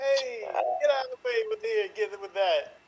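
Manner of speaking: put-on New York accent. Starting a scene after asking the group to continue as New Yorkers, in a New York accent. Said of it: "continue this as if you're New Yorkers".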